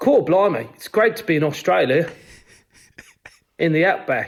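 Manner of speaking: slow, put-on stock Australian accent. Asked for a couple of bars of an australian accent: put-on australian accent. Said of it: "give us a, a couple of bars of an Australian accent there".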